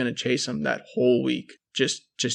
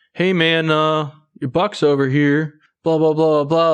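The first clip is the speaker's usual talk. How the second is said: play-acted, raised, casual, nonchalant, offhand delivery; 3 semitones higher, 7 dB louder than usual. Retelling how the shooter called about the buck: imitating Russ sounding nonchalant. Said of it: "all nonchalant".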